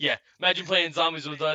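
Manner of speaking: ordinary talk, nothing marked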